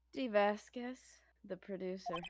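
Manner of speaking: soft, sultry, fancy woman's voice. Playing the producer introducing herself to the lawyers: fancy sexy lady voice. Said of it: "Fancy, sexy lady voice?".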